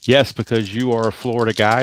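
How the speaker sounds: plain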